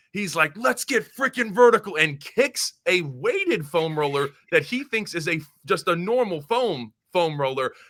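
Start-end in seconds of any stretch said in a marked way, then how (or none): 0.5-1.9 loud, high, pumped-up coach-style shout. Retelling a coach kicking things in the locker room: imitating a fired-up coach yelling. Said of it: "He is kicking things around".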